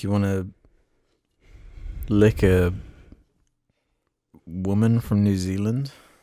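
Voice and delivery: weird, low, halting, drawn-out with long pauses.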